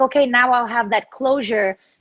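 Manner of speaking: ordinary talk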